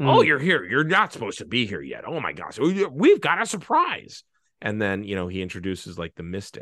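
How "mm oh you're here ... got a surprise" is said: put-on unhinged voice, high and swooping. Imitating the heretic character from a story: mock-crazed character voice. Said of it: "I can't do the voice perfectly, but I think I can give you the tone of it".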